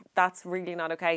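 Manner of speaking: ordinary delivery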